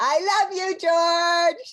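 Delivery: loud mushy affectionate shout. Declaring love loudly on Valentine's Day: loud and mushy. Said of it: "I can be mushy and loud".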